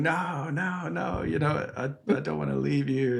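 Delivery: put-on high-pitched little child's scream. Retelling being dragged on mum's ankle as a child: imitating a child screaming. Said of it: "And I'm kind of screaming".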